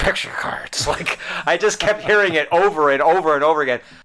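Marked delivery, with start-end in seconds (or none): 0.0-0.9 put-on mumble, muttered under breath. Retelling how a fellow player kept muttering at the table, imitating someone mumbling. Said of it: "he's just mumbling under his breath".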